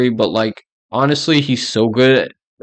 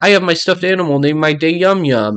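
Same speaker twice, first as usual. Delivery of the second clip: put-on high, whiny, babyish, pouty little-kid voice; 5 semitones higher than usual. Reading a listener's complaint about Lydia, imitating Lydia's child voice. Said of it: "she literally will do a child voice".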